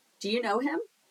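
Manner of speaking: rising intonation lifting up on "him". Explaining how spoken yes-no questions differ from ASL, rising pitch on him. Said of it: "Your voice goes up".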